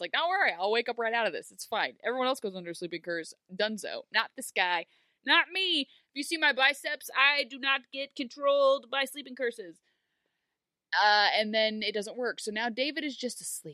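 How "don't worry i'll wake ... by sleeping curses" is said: overconfident, cocky, swaggering, bragging tone. Retelling how David boasted a sleeping curse would not work on him: imitating David's overconfidence. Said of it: "he went into it with Korra confidence".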